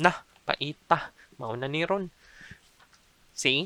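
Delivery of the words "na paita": na, long held pause, then paita. Explaining how to use both words together, long pause between na and paita. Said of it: "So there's a long pause between na and paita".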